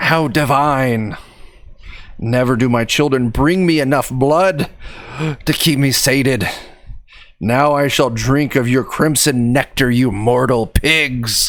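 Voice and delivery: foul, cackling, almost feminine disgusting creature voice. Voicing an unseen creature as rats leap out to attack, in a foul, cackling, almost feminine voice. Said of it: "a foul, disgusting voice. It almost sounds feminine, and it cackles".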